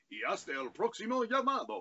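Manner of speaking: put-on Italian accent. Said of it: "kind of an Italian accent".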